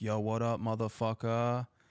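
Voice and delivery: rowdy, high, mildly hollered yell. Retelling how a neighbor's dad yelled from his car: imitating someone screaming. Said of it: "he just screams".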